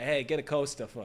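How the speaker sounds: imitated Boston accent. Acting out a man from boston with a drink on the table, in a boston accent. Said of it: "Like he's from Boston".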